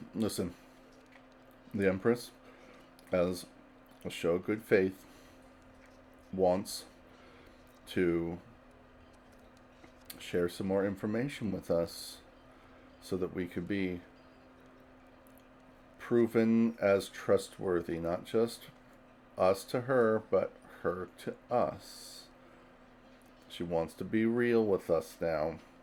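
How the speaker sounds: hushed, soft, confiding voice. A character sits down at the table with two others, in a hushed voice. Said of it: "He's gonna say in a hushed voice".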